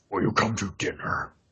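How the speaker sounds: faintly monstrous, breathy, hushed whisper. Showing the voices they can do, slightly monstrous voice. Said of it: "I can also do some monstrous voices, but not too monstrous".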